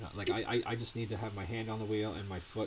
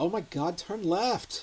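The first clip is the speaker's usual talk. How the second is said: put-on teen girl voice, higher, louder, slower; 9 semitones higher, 7 dB louder than usual. Imagining a teenage girl voice for Jeff, speaking in that voice. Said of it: "teenage girl voice".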